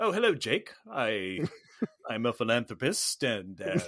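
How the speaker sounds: imitated British accent. Imitating the same character's next scene: imitating a british accent. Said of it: "he's got a British accent".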